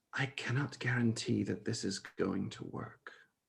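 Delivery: hushed whisper, very close to the ear. Voicing a character who whispers into a player's ear: whispering in someone's ear. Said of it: "She whispers in your ear".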